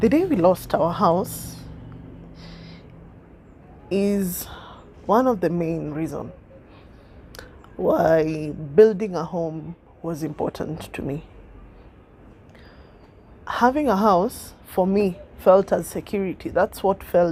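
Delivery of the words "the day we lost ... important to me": speaking through tears, close to crying. Speaker recalls the day the family lost their house, tearing up. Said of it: "sorry, I'm tearing up".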